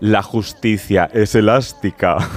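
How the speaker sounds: very low, nasty, wicked villainess voice. Quoting a line from the series Herederos: Concha Velasco's wicked villain voice. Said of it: "decía así con voz de muy mala, malísima".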